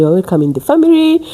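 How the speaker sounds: ordinary talk, nothing marked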